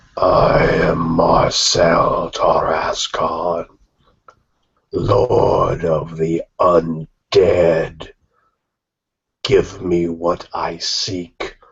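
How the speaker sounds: cold rasping voice. Voicing the undead lord who welcomes the players: cold rasping voice. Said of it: "intones the figure with a cold, rasping voice".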